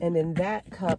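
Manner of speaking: ordinary talk, nothing marked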